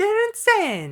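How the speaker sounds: shrill, high, loud put-on Italian accent. Showing how to add emphasis to a word, in an italian accent. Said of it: "put it like an Italian accent or something".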